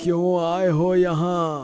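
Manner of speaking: put-on frightening, creepy, scary old man voice. Narrator voices an old man confronting the visitor among fallen books: scary old man's voice. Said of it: "बूढ़ा डरावनी आवाज में बोलता है".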